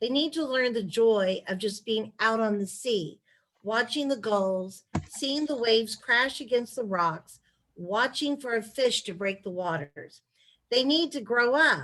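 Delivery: ordinary talk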